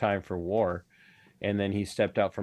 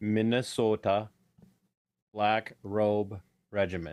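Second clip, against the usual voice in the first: slow, carefully enunciated, every syllable pronounced distinctly. A guest repeats his show's title when the host asks, slow and enunciated. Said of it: "Say your show again slowly and enunciate".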